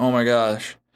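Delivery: excited, panicky freaking-out voice. Retelling seeing a shot buck fall, retelling own freaking out. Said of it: "I'm kind of freaking out, going".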